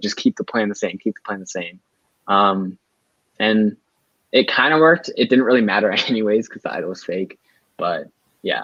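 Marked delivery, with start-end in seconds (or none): 0.0-1.8 acted whisper, quieter and faster. Recounting going over to the other people to keep the plan, retelling a whisper. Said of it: "I did the same thing".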